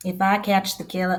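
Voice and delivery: put-on accent of the American South. Quoting a father hunting his son's murderer, in a southern american accent. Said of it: "why am I doing a southern accent?".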